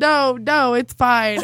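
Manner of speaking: put-on stuffy, congested, blocked-nose voice. Retelling telling a date that she is sick: imitating own stuffy sick voice. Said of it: "when all of your N's are D's".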